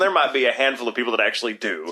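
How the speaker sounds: exaggerated, over-the-top Texas drawl. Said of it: "Texas people talking like this".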